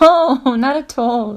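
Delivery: nervous laughter through the words. Asked if she is winding him up, she answers, nervous laughing. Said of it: "Why are you laughing then?".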